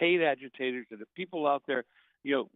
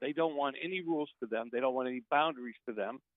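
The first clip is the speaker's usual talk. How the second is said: usual speaking voice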